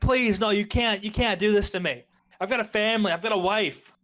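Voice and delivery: yelling, begging tone. In a tabletop game, a character banging on a door, desperate yelling plea. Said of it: "He's still yelling".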